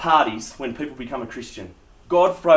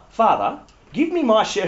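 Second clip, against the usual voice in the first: higher, proper, polite reading voice. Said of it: "He probably didn't say it in that voice".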